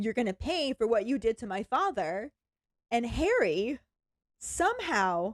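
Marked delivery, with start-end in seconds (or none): none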